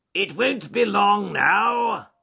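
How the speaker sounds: very loud, high, hoarse rasp, "now" stretched long. Reading a story aloud, the badger speaking to passing field mice: James the badger, rasping. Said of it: "he rasped. He had a very hoarse voice".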